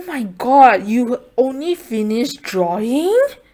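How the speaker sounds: judgmental teacher tone. Retelling how a teacher approached them in class, imitating a judgmental teacher. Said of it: "such a judgmental tone".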